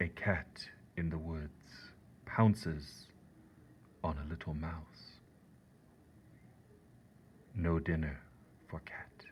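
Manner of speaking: solemn, self-important, hushed whisper, very serious and pretentious. Speaker reads own haiku aloud to listeners in a very serious, pretentious voice. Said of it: "read it in a very serious voice to sound like important and pretentious".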